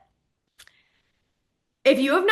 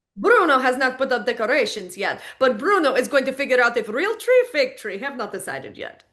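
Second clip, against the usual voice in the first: put-on Italian accent. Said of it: "Like I just mentioned in Bruno tone".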